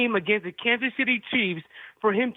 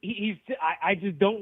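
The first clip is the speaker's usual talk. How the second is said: stuttering delivery, lower pitch, quieter; 3 semitones lower, 5 dB quieter than usual. Given the floor and told to try again to say what you think, stuttering. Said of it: "that stutter".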